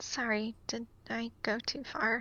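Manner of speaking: hushed, very quiet half-whisper, barely there. Voicing a character who asks another if she went too far: half-whispering very quietly. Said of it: "just kind of whispers very quietly".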